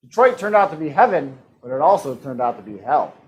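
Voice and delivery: normal talking voice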